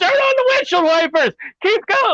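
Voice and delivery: play-acted, very high, screamed. Retelling how Bruno screamed from behind the seat: imitating someone screaming. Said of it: "he's leaning over the seat screaming".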